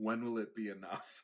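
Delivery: put-on, very heavy, dripping sarcasm. Retelling what the speaker said to someone throwing a tantrum in a store, very sarcastically. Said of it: "but very sarcastically".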